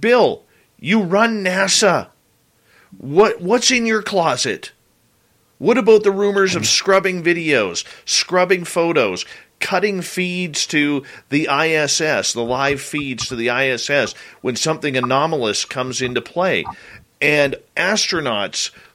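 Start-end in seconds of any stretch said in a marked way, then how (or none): none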